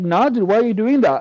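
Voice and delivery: pissed-off, angry, worked-up outburst. Retelling own reaction to a moderator banning someone: retelling an angry outburst. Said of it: "I was pissed".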